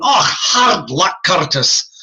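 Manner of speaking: put-on Scottish accent, unhurried and drawn out. Retelling a worker's remark after a kid missed a basket, imitating Frank McClune's Scottish accent. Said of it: "Frank McClune from Scotland".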